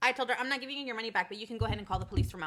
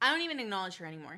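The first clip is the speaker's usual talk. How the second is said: ordinary talk, nothing marked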